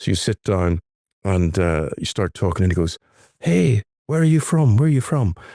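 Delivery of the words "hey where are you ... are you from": put-on high, loud, lilting Irish accent. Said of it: "his accent begins to become very Irish with it".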